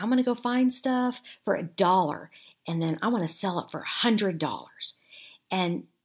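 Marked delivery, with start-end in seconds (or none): none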